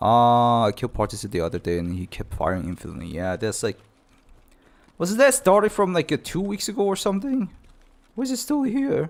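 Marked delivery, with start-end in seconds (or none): 5.0-9.1 very high-pitched voice, breaking and cracking. A player complaining about a long-running game bug, voice cracking. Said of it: "My voice is cracking like crazy".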